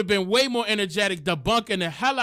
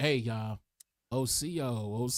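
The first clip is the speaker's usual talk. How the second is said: mock worn-out murmur, very soft, low and slow; 9 semitones lower, 9 dB quieter than usual. Retelling how a late-night live stream greeting sounded, imitating own tired voice. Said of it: "I wasn't talking like this... I was tired".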